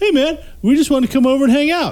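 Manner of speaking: high, chirpy, eager voice.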